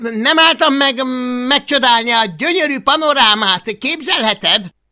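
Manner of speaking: shrill, very loud, high-pitched, huffy, offended shout. Urged from above to hurry while climbing, he calls back, offended. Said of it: "sértődötten".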